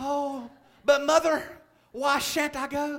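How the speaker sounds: high-pitched, theatrical, overdramatic pleading whine. Mocking how they argue against a no, mock-dramatic whining. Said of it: "win an Academy Award for my dramatic acting".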